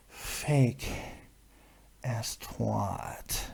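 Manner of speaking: seductive, breathy, sultry whisper. Trying to say an insult in a very sexual manner: seductive delivery. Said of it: "I don't know how to say fake ass twat in a very sexual manner, but I will try".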